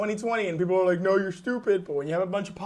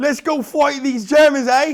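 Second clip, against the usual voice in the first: mock British accent drifting Australian, higher and louder; 7 semitones higher, 10 dB louder than usual. Imitating the British ordering Indian people to fight: put-on British accent, a bit Australian. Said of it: "it's a little bit Australian".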